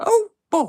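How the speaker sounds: squeaked out, high-pitched and loud. Speaker on a call briefly does the Mickey Mouse voice. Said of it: "I can't do the Mickey Mouse voice for too long".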